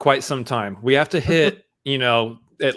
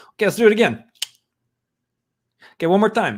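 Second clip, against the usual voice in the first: put-on Italian accent, pitched up; 7 semitones higher than usual. Retelling starting their car, the speaker slips into a put-on Italian accent. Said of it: "Why are you Italian when you start your car?".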